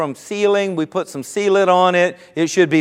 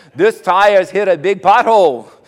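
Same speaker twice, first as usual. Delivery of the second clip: loud, poor put-on Jamaican accent; 5 dB louder than usual. Retelling what the rim repair man said, bad Jamaican accent. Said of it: "I don't have a good Jamaican accent, but he says".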